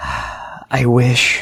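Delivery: very quiet whisper. Voicing a character told he is a ghost: very quiet whisper. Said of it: "in a very, very quiet whisper".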